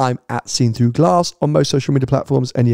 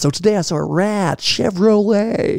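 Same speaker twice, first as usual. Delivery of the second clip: put-on American accent, slow, high and drawn-out; 8 semitones higher than usual. Joking about a theme tune for the trip to America: put-on American accent. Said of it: "We're not gonna talk like that all week".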